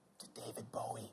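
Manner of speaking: joking whisper, very hushed. Wishing someone a happy birthday, pretend whisper. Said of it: "and I have to whisper this".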